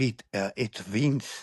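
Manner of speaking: slow, put-on Portuguese accent. Retelling his mother waking him up, imitating her portuguese accent. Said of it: "she's Portuguese, so the accent".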